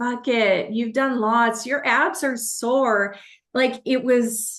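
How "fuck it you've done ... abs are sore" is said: devilish, shoulder-devil voice. Retelling an inner debate during a workout: voicing the devil on her shoulder. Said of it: "the devil's just like".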